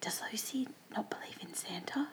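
very quiet, hushed whisper. Retelling how one of the mums asked about Lucy: imitating a whisper. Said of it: "just whispered in my ear".

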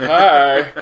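put-on very loud, belted, drunken voice. Retelling how he talked when alone with Daisy: drunk Liberace voice. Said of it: "And he talks like this".

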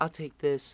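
put-on big spender voice. Retelling a video of a man buying pricey items: imitating a big spender. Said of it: "That was a good impression".

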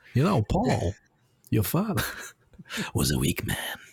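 pitch swinging widely up and down. Quoting a film line as Christopher Walken: Christopher Walken impression. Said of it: "Christopher Walken is always Christopher Walken".

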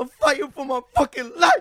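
sobbing, swooping, very high wailing voice. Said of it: "when he freaks out and he's crying".

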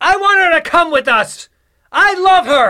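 shrill, very high-pitched, loud shouting. In a drama, a son yells back at the parent who calls her trash. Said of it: "Don't you dare yell at me".

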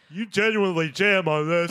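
speech stretched by yawning while talking. Answering another speaker late at night, yawning while talking. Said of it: "I'm yawning while I'm trying to talk".

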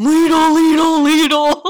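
shrill, piercing, very high, very loud scream. Retelling screaming so loud that everyone got mad: screaming like SpongeBob. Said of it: "Really loud".

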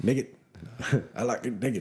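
put-on Texan accent. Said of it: "very Texan".

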